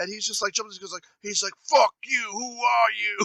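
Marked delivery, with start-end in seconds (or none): 1.6-3.3 rough, creaky, slow, drawn-out ranting outburst. Retelling how Edward Furlong jumped in on a phone interview: imitating Edward Furlong going off. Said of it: "And he just started going off".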